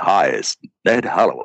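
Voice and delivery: big voice, dropped deep and low. Retelling a phone call from Ned Hallowell: imitating a big deep voice. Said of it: "this big, deep voice goes".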